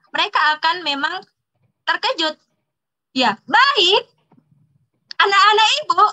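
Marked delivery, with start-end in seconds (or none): 5.2-6.1 abrupt, sudden, loud, high-pitched raised call. Demonstrating how a teacher grabs the class's attention: suddenly loud, raised voice. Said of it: "Saya akan mengeraskan intonasi suara saya gitu kan, secara tiba-tiba".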